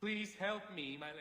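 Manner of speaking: bored, disinterested voice. Voicing a stuck character during a game playthrough, ask for help in a very disinterested voice. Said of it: "that was a very disinterested voice".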